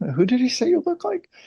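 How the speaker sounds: put-on high, fast, curious little kid voice. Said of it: "I remember going".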